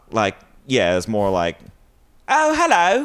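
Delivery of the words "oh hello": put-on southern English accent, higher pitched. Showing what someone from the south sounds like: southern english accent. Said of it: "someone from the south is like".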